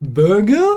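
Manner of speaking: high, rising question lilt on every word. Retelling someone answering a question about favorite food, imitating Christos. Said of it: "Everything's like a question".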